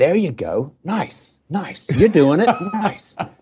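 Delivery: over-the-top fake American accent. Mimicking how americans encourage people: bad american accent impression. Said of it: "this is just the worst impersonation of an American accent".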